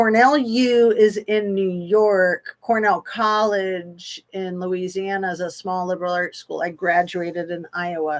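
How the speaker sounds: ordinary talk, nothing marked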